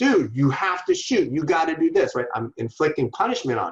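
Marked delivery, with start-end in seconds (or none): 0.0-2.2 acted-out harsh, loud, critical shout, pitched up. Retelling how he talked to his son at water polo: imitating yelling. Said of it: "yelling at him".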